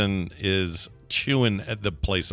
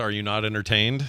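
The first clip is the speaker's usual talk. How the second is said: ordinary talk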